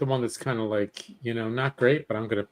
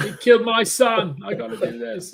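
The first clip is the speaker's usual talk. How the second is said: put-on British accent, higher and louder; 9 semitones higher, 7 dB louder than usual. Joking about a show's next season, doing an Idris Elba impression. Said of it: "that's a pretty good Idris Elba".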